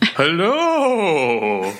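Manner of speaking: ghostly, spooky, drawn-out and swooping voice. Asked on a show for a spooky hello, giving a spooky ghostly hello. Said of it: "are you going to do a, a spooky hello?".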